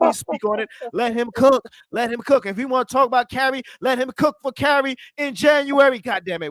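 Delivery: loud, very high, fired-up shouting. Urging the other speaker to speak on it and let him cook: yelling. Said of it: "why am I yelling?".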